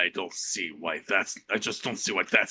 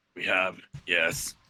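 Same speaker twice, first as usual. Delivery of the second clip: mock-grudging, non-committal, half-annoyed tone. Recounting a talk about the old woman in number 27, mock-grudging, non-committal reply. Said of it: "Grudging, non-committal, approaching annoyed".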